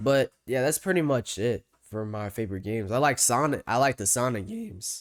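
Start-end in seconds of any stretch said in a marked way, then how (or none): 3.7-5.0 voice breaking and cracking mid-line. Listing favorite games, the speaker's voice cracks mid-sentence: voice cracking. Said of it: "Voice crack crazy".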